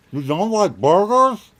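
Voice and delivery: very loud, high speech through a full mouth. Speaker questions the other speaker mid-bite, talking with mouth full. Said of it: "Swallow and say that again".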